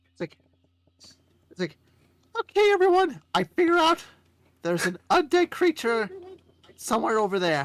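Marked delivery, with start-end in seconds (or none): 2.7-7.7 goofy, low, silly put-on character voice. A player speaks in character to the group, put-on character voice. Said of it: "You're gonna hate me for this voice".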